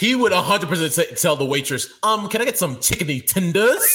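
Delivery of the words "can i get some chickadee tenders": casual, plain everyday delivery. Retelling how a friend orders food. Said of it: "And he would say it like that".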